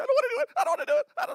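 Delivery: mock, very high, very loud, terrified shriek. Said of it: "I don't mean to make fun".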